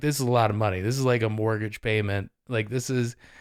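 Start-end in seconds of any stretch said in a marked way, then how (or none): none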